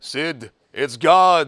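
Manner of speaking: thunderous, very loud bellowing call. Telling a joke about a man begging to win the lottery, answering in a bellowing voice of God. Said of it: "he hears this bellowing voice".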